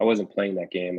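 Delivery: ordinary delivery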